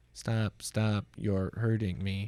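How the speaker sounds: put-on synthetic robot voice. Explaining a voice synthesis story, quoting a cartoon joke: Stephen Hawking robot voice as on Family Guy. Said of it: "this is like Stephen Hawking making f-, made fun of on Family Guy".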